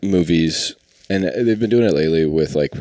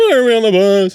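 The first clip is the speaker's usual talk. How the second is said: put-on high, loud, whiny voice. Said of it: "Seinfeld gets on and goes".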